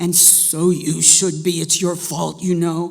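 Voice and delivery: barking, deep and raspy voice. Reading a story, the ailing grandmother answers the girl in a deep, raspy voice. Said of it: "her grandmother said without opening her lidded eye, / And now it was her grandmother's nose. / Her grandmother popped her eye open suddenly and barked in her deep, raspy voice, / No, she said crossly".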